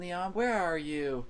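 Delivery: play-acted, high-pitched scream. Retelling a dream of searching for Leon: imitating a scream. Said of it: "I screamed".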